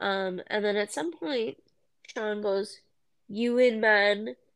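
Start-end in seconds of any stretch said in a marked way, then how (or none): 3.3-4.3 put-on weird, strange Canadian accent. Quoting a line Sean says on the show, in his weird Canadian accent. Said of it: "his weird Canadian accent for that sentence".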